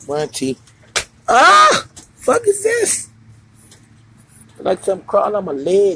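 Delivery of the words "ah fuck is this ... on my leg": high, jumpy, spooked and nervous voice. You don't do nature and there is a big bug around; speak scared and nervous. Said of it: "I'm getting nervous".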